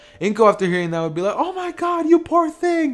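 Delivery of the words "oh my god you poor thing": very high, panicked squeal. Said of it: "As she freaks out".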